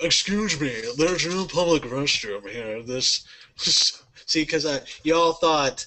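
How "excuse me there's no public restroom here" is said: snooty, stuck-up New Hampshire voice. Doing a comic bit as a character, snooty New Hampshire character voice. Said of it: "I went with snooty, snooty New Hampshire voice".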